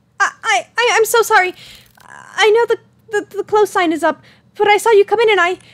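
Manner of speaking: high-pitched, flustered, frantic stammer. A woman apologizing for coming in after the closed sign is up, frantic. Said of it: "The woman appears to be a bit frantic, disheveled".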